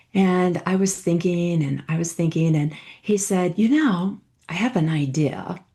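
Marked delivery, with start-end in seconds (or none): 3.6-5.6 mock British-accented speech. Retelling what a coach said in a session: imitating a British accent. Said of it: "in his British accent".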